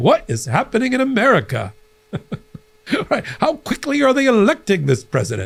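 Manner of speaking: terrible put-on British accent. Voicing British onlookers reacting to the fast American election, terrible British accent. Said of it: "That's my terrible British accent".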